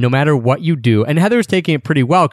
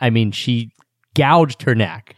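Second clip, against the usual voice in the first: plain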